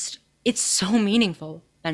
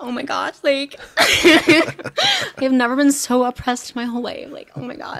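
fake sobbing, higher and louder; 4 semitones higher, 4 dB louder than usual. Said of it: "Start crying".

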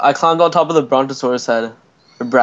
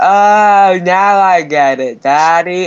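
put-on very slow, high, loud childlike drawl, Oh stretched; 5 semitones higher, 5 dB louder than usual. Teasing another player by imitating a little kid. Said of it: "You sound like a, like a little kid".

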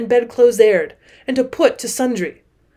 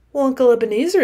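ordinary delivery

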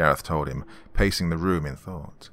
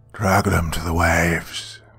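grinding, guttural voice like rocks scraping on seabed; 4 dB louder than usual. Another voice calls from outside after a scream, guttural voice like scraping rocks. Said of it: "this one guttural like the sound of rocks scraping".

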